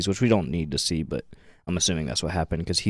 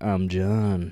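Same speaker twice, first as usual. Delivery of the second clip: put-on seductive voice. Retelling how John introduces himself: imitating John saying it sexually. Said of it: "you could hear the sexual tension in his voice".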